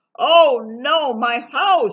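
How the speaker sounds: very loud, high-pitched, drawn-out yell. Reading a story aloud as Beaver sees his house collapse; yelling. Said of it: "yelled Beaver".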